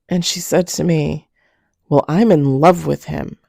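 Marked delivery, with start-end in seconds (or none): 2.1-3.2 put-on forceful, declaring voice, louder. Retelling what a best friend said on the phone: imitating a forceful declaration. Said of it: "the way she said it was".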